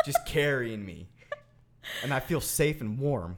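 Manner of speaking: slight Southern twang creeping in. Describing a daydream of being carried, with a slight southern twang. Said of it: "You had a little southern twang".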